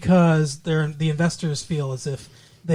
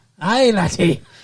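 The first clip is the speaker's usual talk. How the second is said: put-on Irish brogue accent; 2 semitones higher, 3 dB louder than usual. Asking another speaker whether this is a good irish brogue: put-on irish brogue. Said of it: "is that a good Irish brogue".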